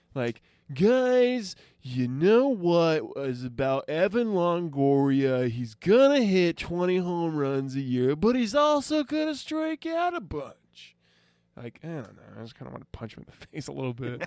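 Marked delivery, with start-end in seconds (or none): 0.7-10.9 loud, cheesy radio-announcer voice, drawn-out guys. Mock a man whose voice makes you want to punch him, in a weird, hokey radio guy voice. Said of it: "weird kind of hokey radio guy voice".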